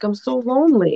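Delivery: tearful voice, speaking through crying. Retelling what a crying woman said: imitating someone crying. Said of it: "She was, like, crying".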